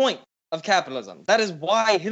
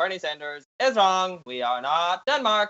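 ordinary delivery

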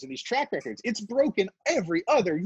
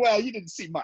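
ordinary talk, nothing marked

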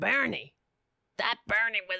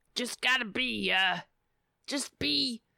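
higher, strained put-on voice. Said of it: "That hurts my voice".

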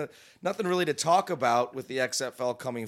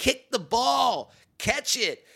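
high, slow, drawn-out mock fan yell. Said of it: "she's basically like".

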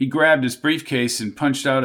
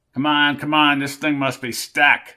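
ordinary delivery

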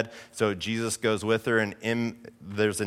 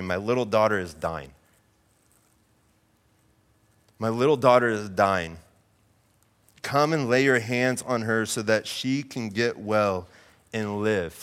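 normal talking voice

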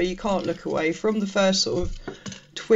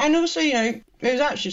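mouth full of food, slightly pitched up; 7 semitones higher than usual. Discussing a film with others, eating while talking. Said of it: "sorry, I'm eating a cream egg".

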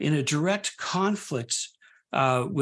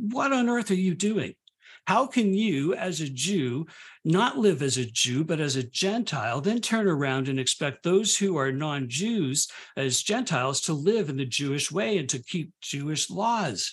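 usual speaking voice

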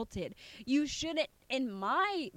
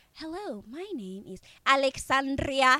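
loud, mocking, showy delivery; 7 dB louder than usual. Mocking how a politician speaks a whole introduction sentence. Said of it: "don't speak the whole entire sentence like".

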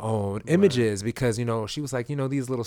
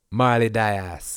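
put-on Jamaican accent; 4 dB louder than usual. Asked to say a woman's name in an accent, in a put-on accent. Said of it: "say that in an accent".

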